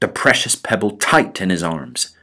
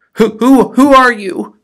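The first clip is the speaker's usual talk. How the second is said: a little frightened, much louder and higher; 9 dB louder than usual. Alexander finds a mouse in the hole and asks, a little frightened. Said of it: "a little frightened".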